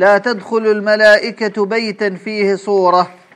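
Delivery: plain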